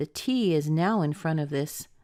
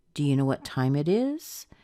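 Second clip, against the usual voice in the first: question-like rising pitch on final is. Lesson on yes-no questions: rise at the end on 'is'. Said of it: "do you hear that rise at the end?".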